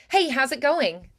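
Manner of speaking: rattled off at top speed. Demonstrating a drill phrase for the other person to repeat, even faster. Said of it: "And even faster".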